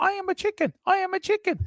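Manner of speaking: very high, shouted chicken squawk.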